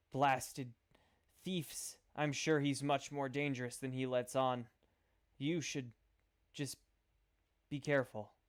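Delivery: hushed whispering voice. Voicing a prisoner in a cell, warning down the hallway: whispering. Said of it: "the lady over here whispers".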